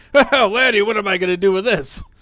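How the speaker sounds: very loud, high-pitched bursting out laughing. Voicing a character who looks at a poetry book: bursting out laughing. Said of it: "he just starts bursting out laughing".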